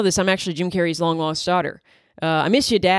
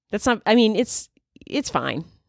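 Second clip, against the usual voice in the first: plain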